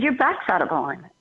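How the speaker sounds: plain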